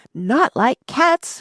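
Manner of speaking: impassioned, shrill, high little mouse voice. The Mouse answers a girl who just mentioned cats: shrill, passionate. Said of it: "cried the Mouse in a shrill, passionate voice".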